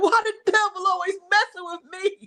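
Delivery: acted-out, high sobbing wail of despair. Recounting a breakdown from yesterday, imitating screaming and crying. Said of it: "I just started screaming and crying".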